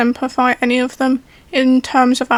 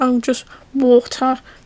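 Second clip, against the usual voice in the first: ordinary talk, nothing marked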